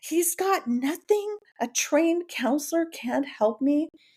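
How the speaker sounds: play-acted, very high, angry yelling outburst. Crying in her car, she retells yelling at God; retelling her yelling at God. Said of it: "I was yelling at God".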